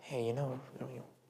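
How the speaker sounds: fast, hushed devil's whisper. Speaker acting out what the devil whispers to people, whispering as the devil. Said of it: "he like whispers to them".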